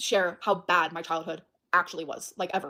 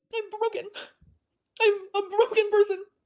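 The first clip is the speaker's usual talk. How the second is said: fake, mock sobbing, higher; 13 semitones higher, 3 dB louder than usual. Saying she is broken: fake crying. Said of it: "Her fake crying".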